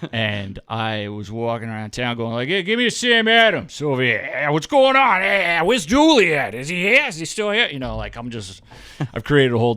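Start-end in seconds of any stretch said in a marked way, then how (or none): 2.5-7.7 exaggerated Boston accent, loud and very high. Retelling walking around town acting like a local: put-on thick boston accent. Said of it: "from Boston with this thick accent".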